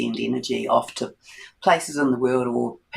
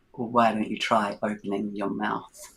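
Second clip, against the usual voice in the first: put-on very dry, deadpan voice, quieter; 2 semitones lower, 4 dB quieter than usual. Recounting the voice that answered her question about a headache, in a very dry voice. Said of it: "I heard this very dry voice say".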